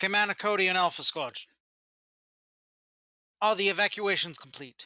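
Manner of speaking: put-on Australian accent. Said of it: "don't ever ask me to do an Australian accent".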